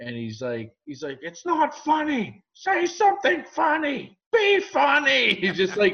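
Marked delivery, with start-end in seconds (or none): 1.2-5.3 mock very high, furious, drawn-out angry yell. Telling about a man in the front row at an act, retelling his angry yell. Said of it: "he starts yelling out eventually".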